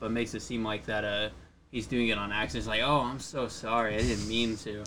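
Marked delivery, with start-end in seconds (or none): 2.8-4.8 put-on sarcasm, much slower. Describing how he pretends it was an accident, retelling a sarcastic apology. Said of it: "All sarcastic".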